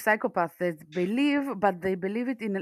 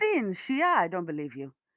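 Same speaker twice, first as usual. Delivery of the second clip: ordinary talk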